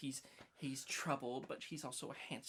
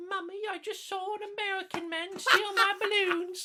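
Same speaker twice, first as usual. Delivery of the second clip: shrill, very high, very loud mocking kid voice; 11 dB louder than usual. Speaker recalls mocking a kid in the movie, in a mocking child voice. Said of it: "I like made a mocking voice of the kid".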